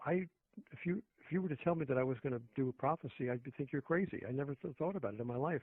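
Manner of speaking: ordinary talk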